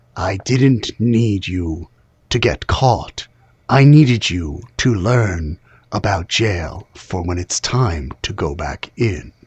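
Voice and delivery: voice dropped very low and deep, character voice. Voicing Raelgar as he speaks to the freed prisoners: Raelgar's voice. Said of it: "you hear Raelgar's voice go".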